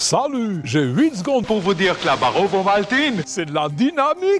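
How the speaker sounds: put-on Swiss French accent. Voice actor speaks in an Ovomaltine commercial: Swiss accent. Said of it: "D'où ça vous est venu cet accent suisse".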